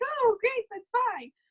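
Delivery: very high, lifted, high-pitched character voice. Voicing her reply in a scenario the speaker wrote, higher-pitched voice. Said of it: "I'm sorry about the higher voice".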